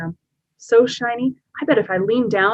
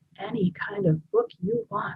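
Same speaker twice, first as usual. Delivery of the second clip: slow half-whisper, muttered under the breath; 3 semitones higher, 9 dB quieter than usual. Reading a story aloud, a character repeats words to themselves: half-whispering to oneself. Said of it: "I whisper to myself".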